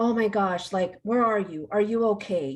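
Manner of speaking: put-on anguished, worried voice. Speaker recalling how her mother used to answer her calls, imitating mother's anguished voice. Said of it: "I could sense this like anguish in her voice".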